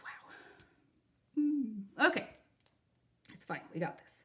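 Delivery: choked-up, hushed, teary near-whisper. Speaker, moved by donations to a GoFundMe, talks on, choked up, crying. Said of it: "I'm kind of crying about it".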